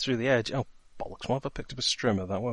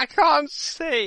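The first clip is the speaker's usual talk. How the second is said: very high, very loud screaming cry; 7 dB louder than usual. A character sprayed with bleach cries out in a game scene, screaming. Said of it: "Now screaming".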